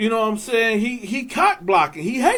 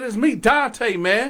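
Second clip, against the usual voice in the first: ordinary talk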